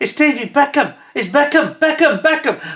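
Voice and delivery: put-on very high, shrill, loud, star-struck fan-girl shrieking. Retelling how a tourist pointed at the speaker: imitating a tourist screaming. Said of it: "one of them screamed".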